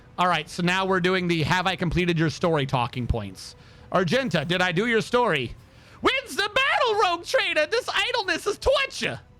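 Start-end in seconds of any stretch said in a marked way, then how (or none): 6.0-9.2 strange, odd, very high put-on warrior voice. Asked whether her story is done, answering in an odd put-on Argenta voice. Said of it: "I don't know where that voice came from".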